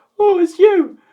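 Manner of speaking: put-on shrill, very high, very loud baby talk. Predicting an episode, imitating the baby talking from the preview: baby voice impression. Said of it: "Very good impression".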